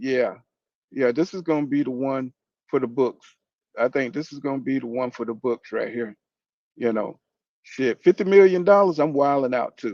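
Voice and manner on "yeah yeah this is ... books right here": usual speaking voice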